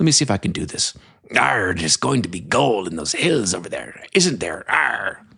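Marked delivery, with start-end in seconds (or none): 1.4-5.1 put-on stock pirate voice with drawn-out arrs. Trying a prospector voice that comes out as a pirate voice. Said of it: "more like a pirate".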